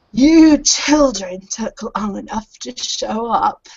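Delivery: slow, creaky, dry crackling voice like rustling paper. Telling a story, the speaker voices the Professor greeting the children in a creaky, crackling voice. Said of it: "He's got a creaky, kind of creaky, crackling voice".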